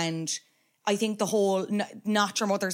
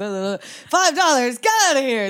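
put-on very loud, sloppy drunken bluster and rambling; 4 semitones higher, 8 dB louder than usual. Retelling the note Homer leaves for Marge: imitating drunk Homer Simpson. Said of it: "he's, like, really drunk".

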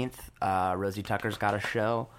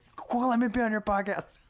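acted tipsy drawl, very high pitch; 13 semitones higher than usual. Podcast host retelling how a friend asked to come on the show, imitating drunk Gabby. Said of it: "She drunkenly".

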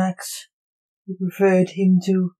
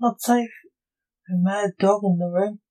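plain

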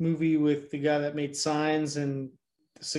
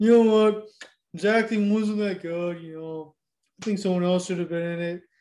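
loud, taunting, mocking tone; 3 semitones higher, 5 dB louder than usual. Mocking the other speaker's opinion of the movie: mocking imitation of the other speaker.

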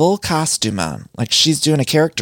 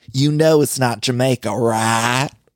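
put-on Kentucky accent. Saying they will miss Brittany from Kentucky: imitating Brittany's Kentucky accent. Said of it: "find myself attracted to that accent".

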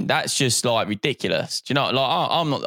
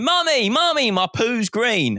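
put-on little girl shriek, very high and drawn out; 11 semitones higher than usual. Recalling a childhood visit, imitating a young girl screaming from the toilet. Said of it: "She's screaming".

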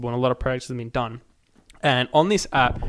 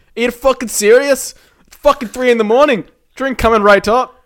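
fake, angry Irish man accent, higher and louder; 10 semitones higher, 10 dB louder than usual. Imagining an irish man answering a 3 a.m. drink order: put-on angry irish accent. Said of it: "controlled by an angry would Irish".

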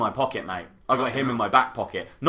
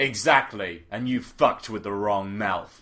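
the coolest possible voice, played up; 3 semitones lower than usual. Playing their character and answering him back, in their coolest voice. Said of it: "So give me your coolest voice".

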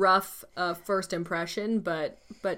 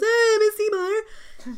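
mock squealing, very high, sudden yell; 12 semitones higher, 4 dB louder than usual. Retelling the plot, quoting a character's scream: imitating Henry's nasal yell. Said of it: "after he goes".

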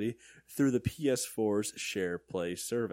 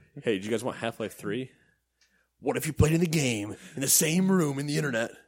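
loud delivery dripping with sarcasm; 3 semitones higher, 5 dB louder than usual. Retelling a game company's announcement as a mock quote: imitating Valve. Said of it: "Valve announced".

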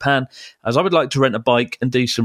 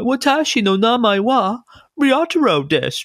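mock English accent in Japanese, much higher, slower; 10 semitones higher than usual. Retelling how someone mocks Japanese learners, in mock English-accented Japanese. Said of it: "he'll often mock the accent".

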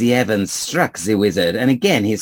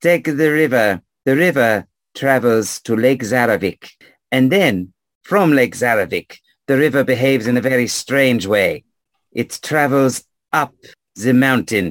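odd-sounding, unplaceable foreign lilt. Speaking to another player, who later repeats the line back: strange accent. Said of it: "You said it in a strange accent".

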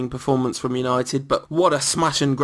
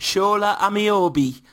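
put-on Geordie Newcastle accent, high pitched; 7 semitones higher than usual. Podcast host showing how to get into the accent, Newcastle accent. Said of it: "That's how you get into a Newcastle accent".

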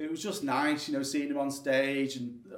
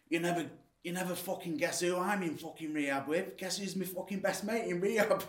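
put-on Salford accent, quieter; 4 semitones higher, 4 dB quieter than usual. Retelling what a man in rehab once told the speaker: Salford accent. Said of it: "I'll try and do a Salford accent".

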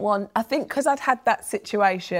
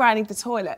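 plain

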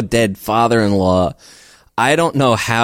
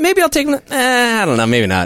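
put-on nonchalant, offhand casual tone, a bit higher; 13 semitones higher than usual. Imitating their own past remarks about calling a dad: imitating a nonchalant tone. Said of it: "just so nonchalant".

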